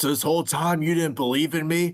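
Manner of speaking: put-on angry voice. Retelling a wrestler's angry promo line: imitating Jay angry. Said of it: "he was, like, all pissed off".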